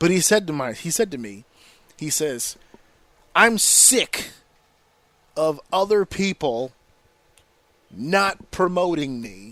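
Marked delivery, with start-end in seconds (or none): 3.3-9.5 put-on dead-serious, straight-faced tone. Retelling what a friend said: imitating a friend's dead-serious tone. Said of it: "he said this with a straight face".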